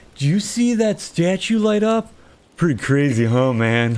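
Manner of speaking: easygoing, laid-back surfer dude voice. Describing how a game character comes across to them: Gabbro surfer-dude voice. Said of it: "comes across as like a surfer dude".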